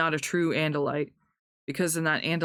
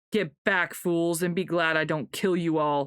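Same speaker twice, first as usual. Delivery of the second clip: contemptuous, scornful sneering voice. Narrator reads a story, voicing a creature's mind-speech, sneering voice. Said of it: "a sneering Thoughtspeak voice said".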